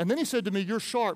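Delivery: ordinary talk, nothing marked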